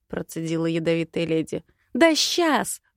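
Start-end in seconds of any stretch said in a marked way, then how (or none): 2.0-2.8 barked out, pitched-up delivery. First-person narrator answers a lady's accusation of lying: barked. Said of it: "гаркнула я".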